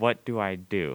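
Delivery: put-on slow, slightly bolder but still unsure tone. Retelling asking what to do with a purring cat on the lap: imitating an unsure voice. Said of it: "a slightly more confident voice, but still not confident at all".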